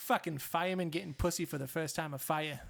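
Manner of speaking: clumsy, bad, fake Boston accent. Trying out a boston accent after wishing for one: bad boston accent. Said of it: "I wish I could do a Boston accent".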